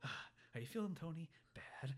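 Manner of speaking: angry whisper, muttered under the breath. Retelling a movie scene where Tony talks to himself: imitating Tony muttering angrily to himself. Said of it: "whispering to himself".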